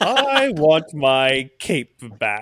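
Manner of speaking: schmaltzy animated-villain voice, high and swooping. A performer gets a line to say, schmaltzy animation villain voice. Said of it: "schmaltzy like animation villain".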